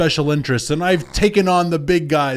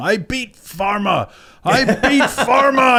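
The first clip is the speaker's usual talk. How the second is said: put-on very slow, dragged-out, high-pitched yelling; 8 semitones higher than usual. Retelling the weird speech given yesterday, imitating Biden screaming. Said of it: "where he was screaming".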